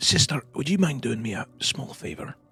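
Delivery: speaking in a whisper. Voicing a character asking a companion for a favor: whispering. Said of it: "he kinda says in a whisper up towards you".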